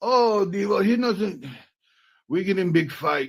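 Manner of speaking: clumsy put-on German accent, pitched high. Retelling what she said in the kitchen about a fight: bad German accent. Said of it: "I don't sound Russian".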